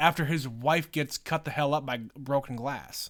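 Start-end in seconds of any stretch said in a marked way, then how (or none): none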